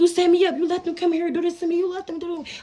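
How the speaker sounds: put-on furious shouting, pitched high. Retelling attacking a man who let attackers in: retelling furious accusation. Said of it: "I'm on his ass".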